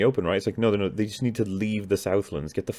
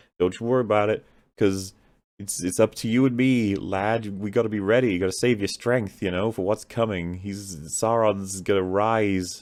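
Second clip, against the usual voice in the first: ordinary talk, nothing marked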